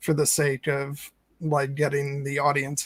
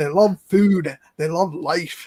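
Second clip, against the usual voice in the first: loud, raised, put-on Scottish accent; 3 semitones higher, 7 dB louder than usual. Retelling an actor's line about hobbits: imitating a Scottish accent. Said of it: "in his Scottish accent".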